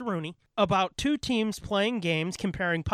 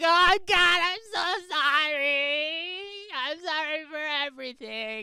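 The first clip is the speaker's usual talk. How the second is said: put-on high, very slow, drawn-out teenage girl voice; 9 semitones higher than usual. Joking that both speakers turned into teenage girls: mock teenage girl voice. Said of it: "we just turned into, like, teenage girls".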